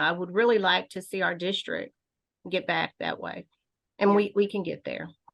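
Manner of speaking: a little choked with feeling, slightly emotional, heartfelt. Speaker explaining why they came back to the district, getting a little emotional. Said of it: "I'm getting a little bit emotional".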